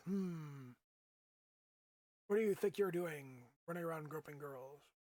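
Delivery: snobby, snooty, condescending, patronizing woman's voice. Speaker pitches a snooty, snobby woman character for a scene: snooty, patronizing woman. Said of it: "snooty, snobby woman... being all patronizing".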